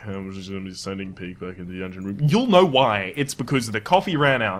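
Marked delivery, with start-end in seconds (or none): 0.0-2.2 very low, very quiet, flat droning monotone. Showing how commentary will sound once the coffee runs out: mock monotone. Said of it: "my commentary becomes a little bit more monotone".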